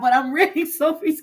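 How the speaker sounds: talking through laughter. Reading comments and asking when he bashed her, laughing while talking. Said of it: "I don't mean to laugh".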